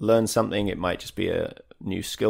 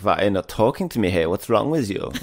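put-on German accent; 5 dB louder than usual. Retelling what a girl said on New Year's Eve: imitating a German accent. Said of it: "her German accent isn't that bad".

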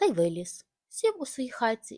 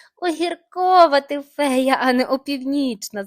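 very loud outburst, bursting with laughter; 4 semitones higher, 10 dB louder than usual. A boy speaks to the fairy in front of him, bursting out laughing. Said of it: "зареготався хлопчик".

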